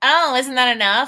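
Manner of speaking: mock sarcastic voice. Retelling an author's view of Anne's reply to her ladies: imitating Anne being sarcastic. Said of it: "she thinks Anne was being sarcastic".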